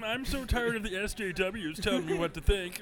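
high, cartoony voice with "SJWs" stretched out. Riffing on Martians, the speaker delivers the line in the Marvin the Martian voice. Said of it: "doing it in the Marvin the Martian voice".

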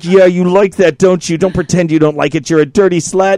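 mock menacing dominant voice, fake aggressive taunting. Retelling playing both roles in a role play: mock menacing dominant role. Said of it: "Are you doing both scripts?".

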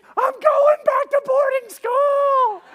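very high, very loud shrieking scream. Retelling a boat ride that went wrong, imitating someone screaming. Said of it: "And then he screams".

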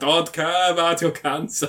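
put-on German accent. Retelling a film scene to a friend: Willem Dafoe German-accent impression. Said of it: "That's his German voice".

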